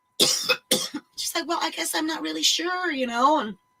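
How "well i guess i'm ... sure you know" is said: mock-meek, mousy stammer, higher and quieter. Retelling a conversation, the speaker quotes her reply in an imitated meek stammering voice. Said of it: "meek and mousy and just sort of mamby pamby and kind of stammering".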